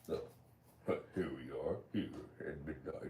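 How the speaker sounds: deep put-on voice, near-whispered, hushed and breathy. Host welcoming listeners to Tinfoil Hat Tuesday, big deep voice. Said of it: "I should use that big deep voice".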